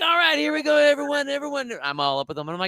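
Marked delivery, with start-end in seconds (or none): 0.0-1.7 loud, very high, animated rallying coach voice. Retelling leading a big group workout: loud coach voice. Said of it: "I got the coach voice going".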